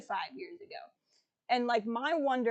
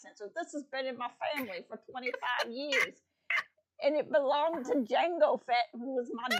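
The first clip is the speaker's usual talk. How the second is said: put-on American South accent. Quoting a line from last week's episode, do a southern-accent Boba Fett impression. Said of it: "so I can do a southern".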